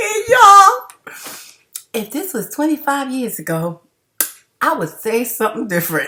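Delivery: high, swooping talk through laughter. Speaking to the audience she calls y'all, laughing while talking. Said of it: "I'm sorry for laughing".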